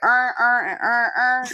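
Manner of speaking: put-on slow, drawn-out Baltimore accent, on said as earn. Recalling a viral video of Baltimore speech, imitating a Baltimore accent. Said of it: "that video where that dude was like".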